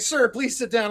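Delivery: plain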